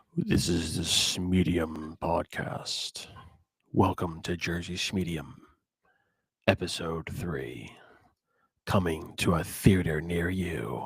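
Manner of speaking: deep, low, very soft voice. Opening the podcast after being asked to start low: low deep voice. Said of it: "like, low, deep".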